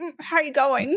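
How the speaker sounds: ordinary talk, nothing marked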